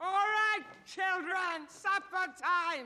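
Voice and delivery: very high, loud calling shout. Calling the children to supper, shouting.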